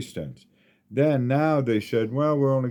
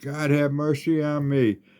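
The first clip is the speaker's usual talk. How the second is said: mock screaming, higher pitch; 3 semitones higher than usual. Retelling screaming in pain as a leg artery collapsed: imitating own screaming. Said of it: "screaming at the top of my lungs".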